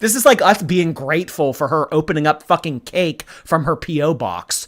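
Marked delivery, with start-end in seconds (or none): none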